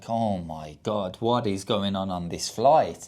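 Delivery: mock muttering in a man's voice. Retelling a passenger's remark during a second emergency: imitating a man muttering. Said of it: "the guy muttered behind me".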